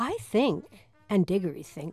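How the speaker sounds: ordinary delivery, nothing marked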